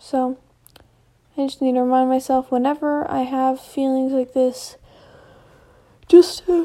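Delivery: spoken through a yawn. Speaker recording a note to themselves, yawning mid-sentence. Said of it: "sorry, I yawned".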